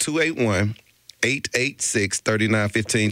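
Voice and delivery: spoken very slowly. A host gives listeners the call-in number, very slow. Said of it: "Let me say the number slow".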